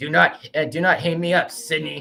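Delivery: menacing, threatening slasher villain voice, phone-style. Talking about a favorite scary movie, the speaker does a Ghostface voice. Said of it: "it's just how I would do the voice of Ghostface".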